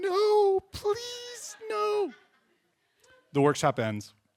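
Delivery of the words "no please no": put-on, high, very high, tearful, crying pleading. Retelling pleading during a painful workshop, imitating crying while pleading. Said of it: "literally starting to cry".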